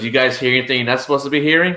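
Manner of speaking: man's voice with audible smile. Retelling what a man who pulled up in a truck said, imitating a man saying it with a big smile. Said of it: "He had a big smile when he said that".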